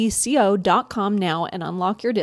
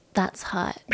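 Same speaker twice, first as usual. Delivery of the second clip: soft, low, put-on socialite-style voice. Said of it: "do I sound like her?".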